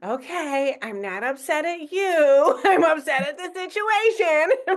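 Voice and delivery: slow, strained politeness through clenched teeth, forced calm. Retelling own reply to a frustrating customer: imitating talking through gritted teeth. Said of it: "Sometimes it's through gritted teeth".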